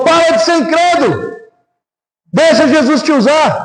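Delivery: mock cross, angry, insistent scolding tone. Retelling an argument, speaker imitates the other man in mock-angry scolding. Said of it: "quando ele fica bravo".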